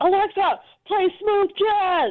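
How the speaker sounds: mock impatient yell. Retelling how he suddenly asked Alexa for music: imitating someone yelling. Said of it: "so he just kept yelling".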